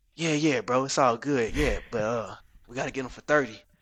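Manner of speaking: put-on laid-back, relaxed voice. Answering the news that he accepted 50,000, in a laid-back Niles impersonation. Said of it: "That's a good impersonation of him".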